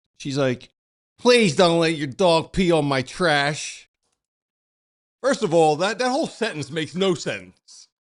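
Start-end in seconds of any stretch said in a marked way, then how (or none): 1.2-3.9 play-acted loud, annoyingly bossy, nagging tone. Retelling what a woman said while the speaker walked the dogs, mock-annoying bossy tone. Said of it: "bossing him around in a real annoying tone".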